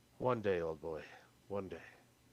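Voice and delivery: low, gentle words said to oneself. Character reading the cane, saying it to himself, said gently to oneself. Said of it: "just say it gently to myself".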